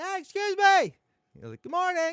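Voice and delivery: yelling. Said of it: "So I have to kinda yell out".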